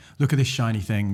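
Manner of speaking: ordinary delivery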